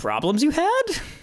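very high, small sage voice. Acting out a recast character as Yoda: Yoda voice. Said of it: "he was gonna be like".

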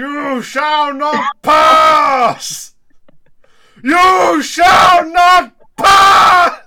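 very loud, very high, screaming wizard voice. Launching into a screaming Lord of the Rings impression for the other host. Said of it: "The guy next door is screaming".

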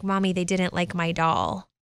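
sulky, let-down child voice, put-on. Retelling what the child said after school, imitating Miles sulking. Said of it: "kind of sulking, his chin's down".

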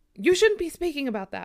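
alarmed, disturbed yell, high and very loud. Reading a grandmother's reply to a question about skinwalkers: disturbed yell. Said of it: "with an almost disturbed yell in her voice".

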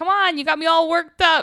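small, high, loud nasally voice. Retelling a funny scene, quoting the man in it, little nasally voice. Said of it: "he has like a little nasally voice".

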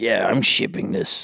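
put-on pirate voice. Joking about shipping something like a package: put-on pirate accent. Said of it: "why'd you use a pirate accent?".

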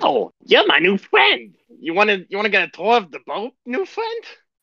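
squeaky, friendly, very high, sing-song little creature voice. Voicing a small kobold who befriends a player: friendly small kobold voice. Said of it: "It's a small little kobold. He's like".

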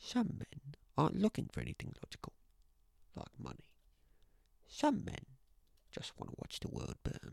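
hushed, breathy, breathed out, barely above a whisper. Trying the Dark Knight quote again while wanting the full quote, good Michael Caine impression. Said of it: "That was a really good impression".

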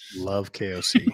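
sarcastic tone. Agreeing with the other speaker's claim that you love him: sarcastic. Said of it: "That's very sarcastic".

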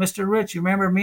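put-on, light, friendly voice calling out. Retelling how a former student called across the street: imitating someone yelling. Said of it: "he yelled out across the street".

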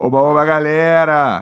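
loud, yelling shout. Host welcoming the audience back around the Storycast campfire, shouting. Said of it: "Tô gritando, né?".

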